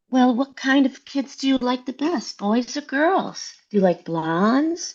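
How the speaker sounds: lovely, beautiful on-air radio announcer voice. Retelling a phone call, the speaker imitates a woman questioning a man, beautiful radio voice. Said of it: "with this kind of voice where".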